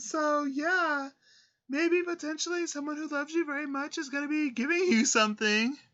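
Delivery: very high, very loud voice after cracking. Speaker explains a storyline while their voice has cracked, really high voice. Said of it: "my voice is just really high right now".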